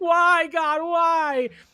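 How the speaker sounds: put-on heartbroken crying, high and tearful. Retelling watching a player get hurt: imitating own crying plea. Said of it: "heartbroken, crying in the corner, like".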